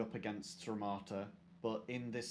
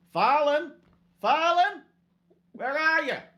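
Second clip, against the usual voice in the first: very high, very loud calling out; 19 dB louder than usual. Game master voicing Farlan's mother calling out to him, Anway calling out. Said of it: "calls out to you".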